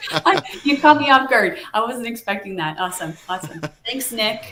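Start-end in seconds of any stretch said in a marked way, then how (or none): 0.1-2.8 talking through laughter, loud and high. Reacting mid-answer to something unexpected, laughing while talking. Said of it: "sorry, I'm laughing at the students".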